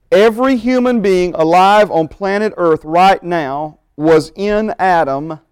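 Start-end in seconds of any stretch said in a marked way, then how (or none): 3.9-5.3 slow delivery with strong stress on "in". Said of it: "capital I, capital N, double underline".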